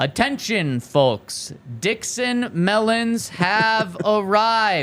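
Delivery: drawn-out loudspeaker announcement. Former grocery worker retelling an hourly PA call: very slow announcement. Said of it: "proclaim in a very slow voice".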